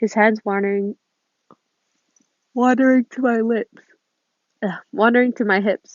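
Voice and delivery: yawning while speaking the words. Reading a story aloud, yawning while reading. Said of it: "Sorry, I'm yawning so much".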